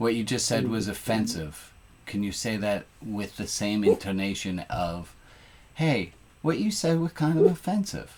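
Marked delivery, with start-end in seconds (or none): 5.7-8.1 easygoing, offhand, light, breezy, raised pitch. Showing how to call out an offensive remark, with lightness. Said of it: "With just a with with the lightness to it".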